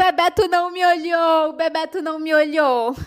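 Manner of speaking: acted-out mock crying. Recalling a childhood scene, acting out past self crying. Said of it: "E eu ficava chorando".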